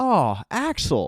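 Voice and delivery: high, slow excited voice. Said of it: "[name] and [name] excitedly say".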